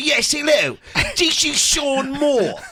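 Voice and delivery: put-on terrible over-the-top English accent. Retelling how he introduced himself: bad english accent. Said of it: "I did the worst English accent known to man".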